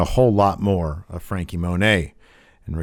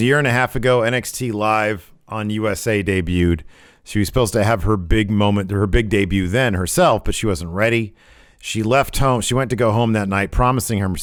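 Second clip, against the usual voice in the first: usual speaking voice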